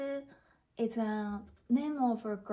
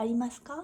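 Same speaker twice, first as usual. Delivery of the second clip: final か of ありますか rises in pitch. Teaching a question form, rising at the end of ありますか. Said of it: "at the end of the sentence, you kind of have to go up, the intonation have to go up".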